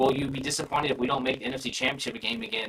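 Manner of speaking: usual speaking voice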